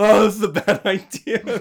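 very high, very loud, drawn-out whiny crying wail. Retelling eating a habanero on air: imitating own crying. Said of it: "everybody just hears me cry".

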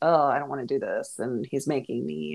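plain

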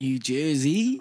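unintended Australian accent slipping in. Recalling four years spent in New Jersey, accidental Australian accent. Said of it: "I don't know why I did an Australian accent".

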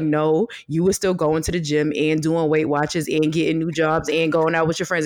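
plain

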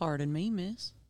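put-on Old West cowboy accent. Asked to say sorry in their most cowboy accent, speaker apologizes in a cowboy accent. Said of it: "Say sorry in your most cowboy accent".

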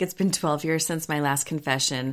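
ordinary delivery

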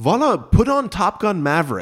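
very loud, very high, shrill booming yell. Retelling a father yelling across the dark room during a movie: imitating dad yelling. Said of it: "He just yells to me in living room voice".

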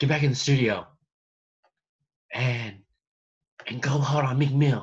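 bad put-on voice of a woman. Imagining a scene in a hotel: horrible Serena Williams impression. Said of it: "That's a horrible Serena impression".

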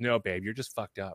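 mock deadpan, flat delivery. Retelling her mom's answer when she asked if things would improve, imitating mom's deadpan. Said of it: "my mom like looks at me deadpan".

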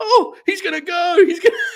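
abrupt, high, loud screaming outburst. Acting out Jerry, who never cared about those fights, imitating Jerry suddenly yelling. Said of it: "all of a sudden starts yelling".

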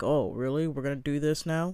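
ordinary talk, nothing marked

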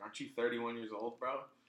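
normal talking voice

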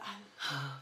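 deep, breathless, breathy hushed whisper. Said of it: "You know when you get that deep voice?".

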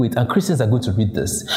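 ordinary talk

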